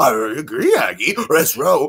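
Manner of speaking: cartoon dog voice with swooping, swinging pitch. Showing off voices on request, the speaker does Scooby-Doo. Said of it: "there's Shaggy and Scooby".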